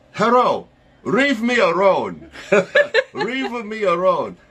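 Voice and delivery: put-on heavy, thick Japanese accent, L and R swapped. Giving an example of how their mutual friend talks, imitating Maki's Japanese accent. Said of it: "she has a very thick Japanese accent".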